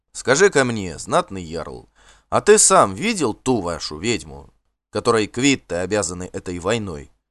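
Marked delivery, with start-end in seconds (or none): none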